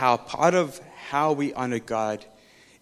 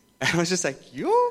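ordinary talk

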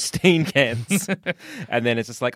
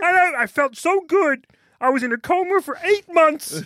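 put-on puppet frog voice, higher. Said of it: "you gotta do a bit more of a Kermit".

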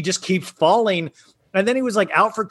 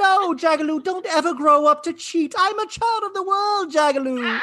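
put-on fussy robot voice, higher pitch; 11 semitones higher than usual. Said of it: "I always do it, uh, Dorit three P O".

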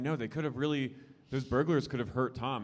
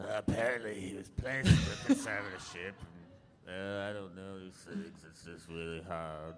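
low growling put-on voice; 5 semitones lower, 5 dB quieter than usual. Recapping a reality show episode, quoting her lines: Erika's low growl. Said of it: "she growls this information at them".

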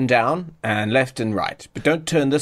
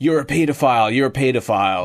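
restrained, mild megaphone-style holler. Retelling what a man yelled from a helicopter, acting out a megaphone yell. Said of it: "he's just yelling on a megaphone".

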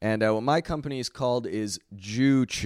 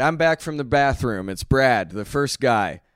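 ordinary talk

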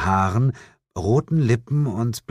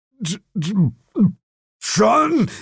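very slow, very high, drawn-out stammering groan; 12 semitones higher, 4 dB louder than usual. The narrator's partner staggers and drops to his knees, groaning. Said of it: "ächzte mein Partner".

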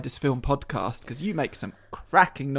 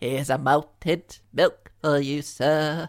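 put-on little old lady voice. Acting out the listener walking up to a stranger on the street, old woman voice. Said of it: "talking like an old woman".

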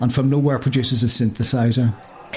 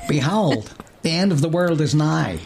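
put-on American accent, hippie-style voice; 3 semitones higher than usual. Reading a hippie's line from a script, in an American accent. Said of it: "That's what I've just done".

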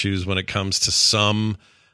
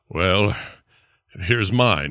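very fancy, put-on voice; 2 semitones lower than usual. Play Geralt offering his own card in an exchange on screen, in a Geralt of Rivia impression. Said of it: "that's a good Geralt impression".

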